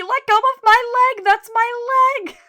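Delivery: shrill, very high, drawn-out shriek at full volume. Recapping a scene where he drags her around the office, retelling a scream. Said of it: "She's like screaming at him".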